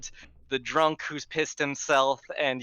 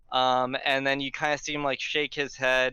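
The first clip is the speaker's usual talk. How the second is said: usual speaking voice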